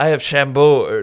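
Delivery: put-on cringe, loud, slow, showy theater kid voice. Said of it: "He sounds like John Mulaney, but in a cringe way".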